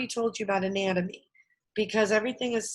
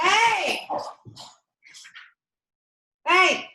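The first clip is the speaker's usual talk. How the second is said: shrill, sudden, high, loud yell; 9 semitones higher, 5 dB louder than usual. Explaining something to a camera, the speaker suddenly breaks off yelling. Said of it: "I didn't mean to yell in the camera".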